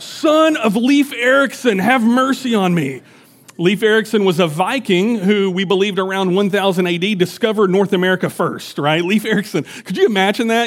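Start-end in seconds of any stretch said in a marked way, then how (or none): 0.0-3.0 slow, high, drawn-out hollering call. Imagining calling out to someone on the road today: pretend yelling out. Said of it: "I'd be yelling out".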